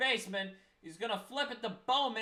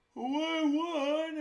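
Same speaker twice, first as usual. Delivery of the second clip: talking mid-yawn, higher; 6 semitones higher than usual. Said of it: "as I'm yawning".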